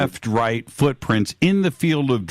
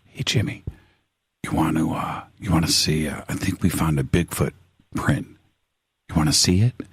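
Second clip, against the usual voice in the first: very deep, low, secretive hushed whisper; 7 semitones lower than usual. Recounting someone who came up at the fire pit, retelling a whisper. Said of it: "he comes up and he whispers".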